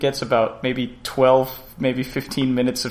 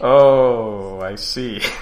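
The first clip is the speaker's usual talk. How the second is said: disappointed, let-down tone with drawn-out oh; 3 semitones lower than usual. Hearing which film the other person got in the mail, disappointed. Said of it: "You sound so disappointed".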